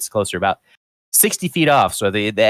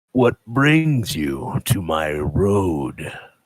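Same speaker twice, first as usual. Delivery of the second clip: grumbly, grumbling tree character voice; 2 semitones lower than usual. Game master voicing a tree that speaks to the approaching players, in a grumbling tree voice. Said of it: "you hear this grumbling voice".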